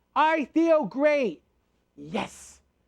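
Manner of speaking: heartfelt, passionate, very slow and high-pitched. Leading listeners through an exercise, saying the phrase with passion. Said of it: "Say it with passion".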